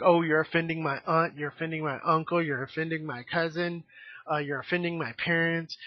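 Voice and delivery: normal talking voice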